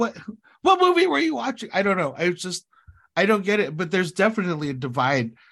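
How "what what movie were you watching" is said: very high yelling. Retelling yelling at the audience after the movie: retelling own yelling. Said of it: "just yelling at everybody".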